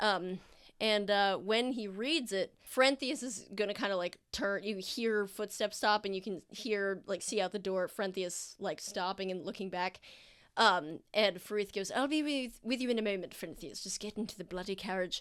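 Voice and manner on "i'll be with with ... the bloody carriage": muttering in a low voice. Recounting a scene as Farith speaks to Frenthius, muttering under his breath. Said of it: "the second part was like kind of under his breath".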